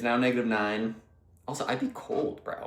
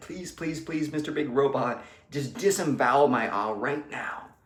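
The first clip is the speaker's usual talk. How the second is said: imitated begging, pleading voice; 3 semitones higher than usual. Acting out a kneeling man pleading with the big robot, mock pleading. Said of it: "He's on his knees and he is has his hands clasped".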